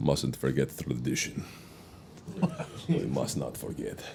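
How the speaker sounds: breathy, hushed, whispered Russian-sounding accent. Joking about a new tradition in the group, in a Russian-sounding Tevye voice. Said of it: "It sounded Russian, but Darth Vader".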